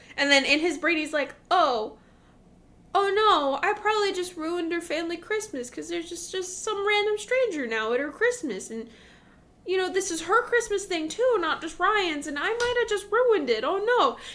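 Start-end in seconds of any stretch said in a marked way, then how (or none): 1.5-14.2 high-pitched, fretful, puppy-dog golden-retriever voice. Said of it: "He's very, like, golden retriever".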